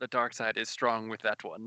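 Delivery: low, quiet mumble under the breath. Retelling what they said after someone slammed the door, a quiet mumble. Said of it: "I just quietly mumbled".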